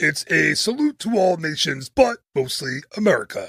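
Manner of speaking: puppet eagle character voice. Retelling a Muppet Vision 3D scene, the speaker quotes Sam answering Kermit: Sam Eagle voice. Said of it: "my best Sam Eagle voice".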